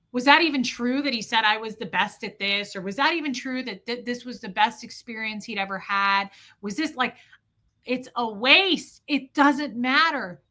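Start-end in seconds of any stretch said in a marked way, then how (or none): none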